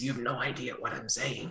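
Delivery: raspy, hushed voice barely above a whisper. Mocking hard-to-understand dialogue in a movie: raspy King Arthur voice. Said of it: "Raspy King Arthur voice".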